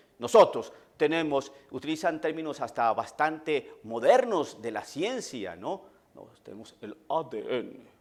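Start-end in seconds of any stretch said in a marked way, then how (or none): 6.2-7.7 very soft, hushed radio-announcer voice. Quoting what Protestant brothers say, in announcer voice. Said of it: "así con voz de locutor".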